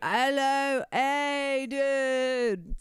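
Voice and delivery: put-on high, loud, drunk-sounding British accent.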